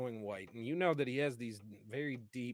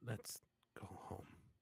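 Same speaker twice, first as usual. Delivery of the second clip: very soft, very quiet whisper, close to ear; 3 semitones lower, 12 dB quieter than usual. Voicing a character after a kiss, whispering into someone's ear. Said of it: "whispering into your ear".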